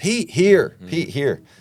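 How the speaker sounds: play-acted very high yelling. Retelling searching for a missing dog, speaker re-enacts yelling for it. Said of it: "now I'm yelling".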